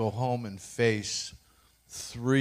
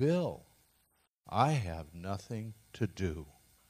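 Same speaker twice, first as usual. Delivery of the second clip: quiet, soft-spoken, almost hushed; 2 semitones lower, 5 dB quieter than usual. Bill retells what the person who looked at his x-rays said: quiet voice. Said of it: "in a quiet voice says".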